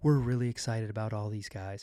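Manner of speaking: gentle, mild, soft and quiet tone. Predicting what will be said at a press conference: soft tone imitating Joe Cronin. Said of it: "Joe Cronin will talk in that soft tone and say".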